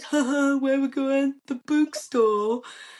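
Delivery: mocking Northern accent. Retelling how campers mocked the speaker's Northern pronunciation of book: imitating campers mocking a Northern accent. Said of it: "taking the mick out of us".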